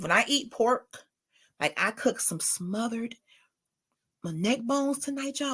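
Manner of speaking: soft, hushed half-whisper under the breath. Speaker addressing y'all catches themself half-whispering. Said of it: "Why am I whispering?".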